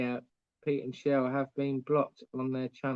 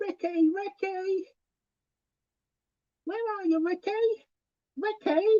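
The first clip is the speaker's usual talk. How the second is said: put-on woman's yell, much higher pitch. Choosing which impression to do, then a Bianca impression yelling Ricky. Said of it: "more likely to do Bianca than Ricky".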